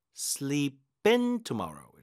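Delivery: very slow, with IN pushed hard.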